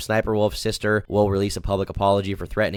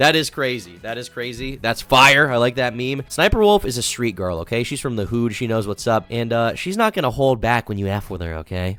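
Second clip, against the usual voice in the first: ordinary delivery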